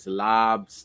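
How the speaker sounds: Boston pronunciation. Showing another speaker how the word sounds in Boston: Boston accent. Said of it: "you gotta extend the A".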